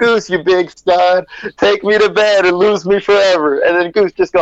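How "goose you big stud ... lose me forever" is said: loud, screamed-out delivery. Retelling a movie scene's big line: imitating Meg Ryan screaming. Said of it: "Meg Ryan screaming out".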